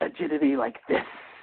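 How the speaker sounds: very high-pitched, close, whispered voice. Retelling a show scene where Tobias whispers a line: Tobias whisper. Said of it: "leaps onto his back and whispers to him".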